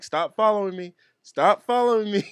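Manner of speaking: mock high shouting. Retelling a homeless man telling a follower to stop: imitating someone yelling. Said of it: "yelling back at him".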